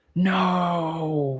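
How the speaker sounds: whispering in horror. Reading a story aloud, voicing a boy who sees trouble: horrified whisper. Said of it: "whispers Wirt to himself in horror".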